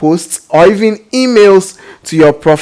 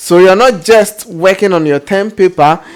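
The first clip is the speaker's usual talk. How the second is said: ordinary talk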